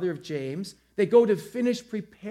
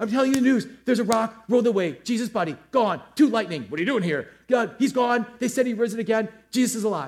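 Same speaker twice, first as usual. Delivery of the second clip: put-on breathless, out-of-breath, rushed, rattled-off babble; 4 semitones higher, 4 dB louder than usual. Acting out people rushing back to tell the news; acting out breathless messengers. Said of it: "Completely out of breath".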